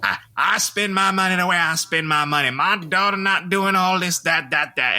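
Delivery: high, feminine voice. Mocking a reality TV father while complaining about his voice: Todd Chrisley impression. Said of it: "and he's like, just like".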